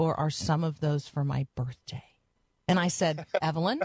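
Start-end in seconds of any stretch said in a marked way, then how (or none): 0.0-2.0 put-on sad little child's voice. Retelling what a little girl asked, imitating her mock-sad little voice. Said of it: "then she got a little sad voice".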